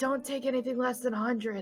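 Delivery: quiet whispering. A tabletop player has their character speak privately to Hex: whispering. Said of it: "I want to whisper over to Hex".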